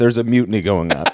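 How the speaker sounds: acted, low, flat deadpan with no emotion at all. Quoting the producer Shelby's exact words: Shelby's deadpan voice. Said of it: "with his beautiful deadpan voice".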